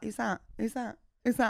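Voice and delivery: puzzled, confused tone, repeated over and over. Retelling a friend at a film asking about characters: imitating a confused friend. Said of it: "she's like".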